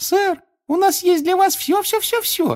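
tiny, thin, squeaky elf voice, very high. Asked where the food came from, thin squeak imitating a house-elf. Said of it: "тоненько пропищал, изображая домашнего эльфа".

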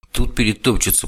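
ordinary delivery

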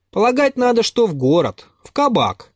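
contemptuous, dismissive. Pyotr adds a remark, leaning toward the coachman, contemptuously. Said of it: "прибавил он презрительно".

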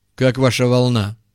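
ordinary talk

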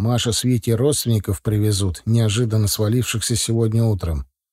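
plain reading voice

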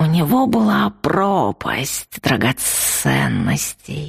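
hissing, dreamy dragon voice. A creature answers the narrator's question in a dreamy hiss. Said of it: "мечтательно прошипел рычарк".

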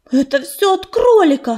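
sudden exclaimed outburst. The healer cat, told that Ryabinka feels sick, exclaims. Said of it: "воскликнула пепелица".

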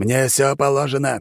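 high-pitched, snarling, growling voice. A mage refuses to be told he cannot have wine, growled. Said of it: "прорычал Торрен".

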